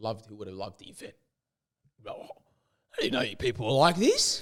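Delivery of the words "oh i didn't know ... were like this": broad put-on Australian accent. Voicing an aussie bloke surprised at the event: broad aussie accent. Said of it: "a good, hard-blown Aussie".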